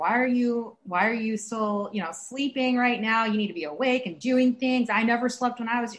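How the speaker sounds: ordinary talk, nothing marked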